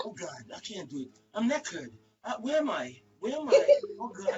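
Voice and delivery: mock groggy, dazed, half-asleep, just-woken voice. You are retelling how your mom sounded when you called her this morning, imitating mom knocked out asleep. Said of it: "That's how she sounded this morning when I called her".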